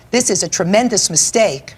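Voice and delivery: ordinary talk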